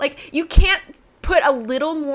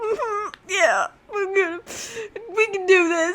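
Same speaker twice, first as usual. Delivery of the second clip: high, choked-up voice, catching; 6 semitones higher than usual. Retelling a movie scene where Bella watches Jessica: imitating Bella choked up. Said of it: "kinda choked up".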